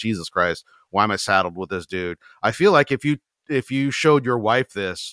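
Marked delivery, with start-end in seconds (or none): 0.0-2.2 mock resigned tone, lower and faster. Siding with Angie, speaker voices her reaction, imitating Angie's resignation. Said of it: "I get the resignation in her voice".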